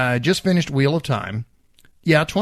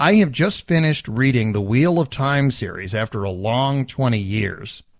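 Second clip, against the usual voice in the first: usual speaking voice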